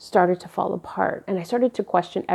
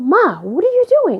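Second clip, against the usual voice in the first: loud, high-pitched hollering yell; 11 semitones higher, 7 dB louder than usual. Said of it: "screaming at the top of our lungs".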